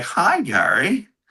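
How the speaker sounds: eerie, high, creepy little doll voice. Looking at a creepy doll, voicing the doll: creepy doll voice. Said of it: "He's like".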